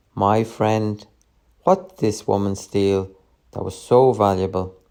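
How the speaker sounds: usual speaking voice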